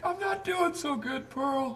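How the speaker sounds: very high, soft, slow, tearful sobbing. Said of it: "Don't make fun of me crying".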